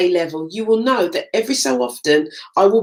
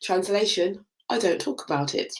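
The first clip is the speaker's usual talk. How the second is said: normal talking voice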